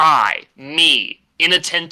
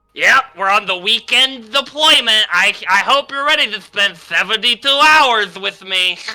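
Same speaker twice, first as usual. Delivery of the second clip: geeky little nerd voice, higher; 7 semitones higher, 4 dB louder than usual. Role-playing the nerdiest character in a patrol scene: geeky little nerd voice. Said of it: "I'll play the geediest little nerd".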